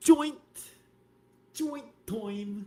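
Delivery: high-pitched Brooklyn New York accent. Speakers from Brooklyn show how New Yorkers say a word: New York accent. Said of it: "See that accent?".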